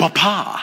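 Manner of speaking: Bapa with heavy stress and a long -pa. Imitating how she says the name Bapa: heavy stress on second syllable of Bapa. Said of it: "Big heavy emphasis on the second syllable. She says it like she's French and Italian".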